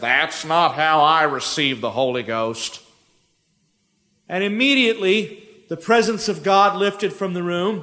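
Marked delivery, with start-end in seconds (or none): 0.0-2.8 put-on very low, drawling southern accent. Retelling what her father said as he walked into the prayer room, southern drawl. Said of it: "with his southern drawl".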